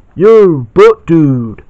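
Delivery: very loud, high-pitched cartoon voice hollering. Showing DVD discs, doing an Otto voice for a joke. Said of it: "I just can't resist doing that".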